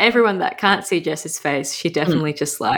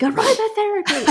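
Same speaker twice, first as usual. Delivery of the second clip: very high, sudden, blurted-out shout. Retelling a mother suddenly remembering a word: imitating mum yelling. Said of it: "she just yelled that in our house".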